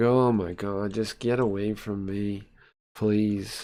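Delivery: fed-up, totally downcast, weary pleading woman's voice. Voicing a woman's thoughts while a man talks to her: imitating a woman who is fed up. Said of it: "she looks totally down".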